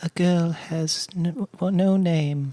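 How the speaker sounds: soft, squeaky little voice, squeaked out softly. Taking a turn in a guess-who impressions game, doing an Arya impression. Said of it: "I have to do the impression".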